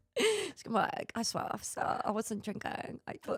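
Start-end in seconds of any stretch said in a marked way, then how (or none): 1.1-3.3 whispered, breathy put-on British accent. Acting out a woman speaking to police officer: mock british accent. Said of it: "talking in a British accent".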